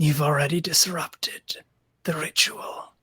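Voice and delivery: eerie creature voice, spooky breathy whisper. Voicing a character in a role-play scene: spooky voice. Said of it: "You have a spooky voice".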